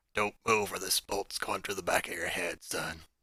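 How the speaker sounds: gruff, rough whisper. Narrating a game scene, a figure behind the listener threatens them, in a gruff whisper. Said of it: "you hear a gruff voice whisper into your ear".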